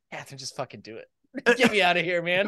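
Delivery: put-on whisper. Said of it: "I'd whisper in my wife's ear".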